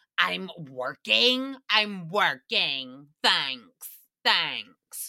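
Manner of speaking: slow, low, drawn-out defensive insistence. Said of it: "the tone is so defensive".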